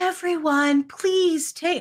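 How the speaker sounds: very gentle, mild voice. Recounting a boy band show, the speaker imitates the lady addressing the crowd: imitating Cat Callahan's soft voice. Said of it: "this lady with like the softest voice ever".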